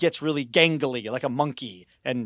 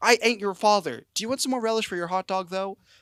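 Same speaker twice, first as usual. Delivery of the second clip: put-on high, exclaiming voice; 7 semitones higher than usual. Retelling a movie character offering relish for a hot dog, imitating someone exclaiming. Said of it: "Just like exclaiming in this cafeteria".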